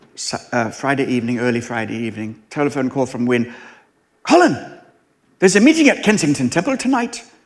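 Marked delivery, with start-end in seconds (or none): 4.2-7.2 put-on Welsh accent, pitched up. Retelling a phone call from the boss: imitating a Welsh accent. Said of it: "He was Welsh, just in case you didn't get the accent".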